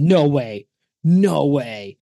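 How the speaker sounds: put-on yell. Recalling standing up while watching a Royal Rumble, retelling a yell. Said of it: "I stood up and yelled".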